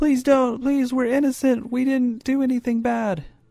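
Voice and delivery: very high, shrieked, screaming, begging voice. Voicing the supposed witches as they scream to the party: screaming, pleading. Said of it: "are screaming like".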